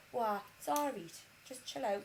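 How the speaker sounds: put-on Durham accent. Imitating a calm partner getting everyone ready: imitating partner's Durham accent. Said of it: "But I can't do a Durham accent".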